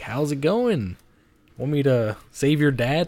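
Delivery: sly, unhurried delivery. Imitating the devil from Ghost Rider: sly Ghost Rider devil voice. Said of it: "he's just kinda being like".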